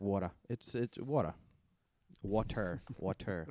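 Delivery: Rhode Island pronunciation. Showing how the word water comes out: Rhode Island accent. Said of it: "the Rhode Island accent will come through, especially if I say water".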